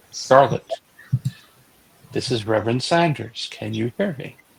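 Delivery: hushed, intimate, soft half-whisper. Voicing a reverend leaning over a girl: half-whispering. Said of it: "so I whisper into her ear".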